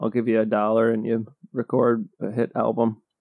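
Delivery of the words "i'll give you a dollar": plain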